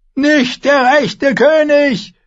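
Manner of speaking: shrill, very high, loud roaring bellow. A narrator reads the man's cry as the Goldcloaks seize him, bellowing. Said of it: "brüllte er noch einmal".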